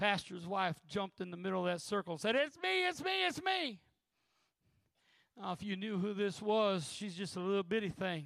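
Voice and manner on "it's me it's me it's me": put-on, very high, drawn-out, loud crying out. Speaker retells how the pastor's wife jumped into the circle, retelling a loud cry. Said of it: "her voice got real loud saying".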